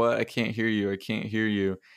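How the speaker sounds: usual speaking voice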